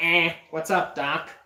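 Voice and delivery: jokey, offhand put-on cartoon rabbit voice. Describing a joking skit, doing a Bugs Bunny voice. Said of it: "a joking skit with Bugs Bunny".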